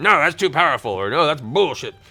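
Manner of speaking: acted angry tone. Advising players to ask online communities for feedback, voicing a commenter, mock-angry.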